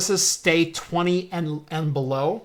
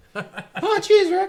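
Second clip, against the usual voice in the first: squeaky, very high-pitched, pushed-up sidekick voice. Co-hosts riff on the show coming back in November, Morty impression. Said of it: "I do a better Rick than I do a Morty".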